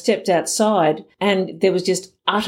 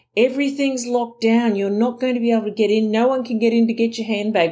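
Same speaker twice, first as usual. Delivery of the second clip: mock screaming, imitated yell, higher pitch; 4 semitones higher than usual. Retelling shouting at a woman during a bomb evacuation: imitating own screaming. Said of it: "I'm screaming at this woman".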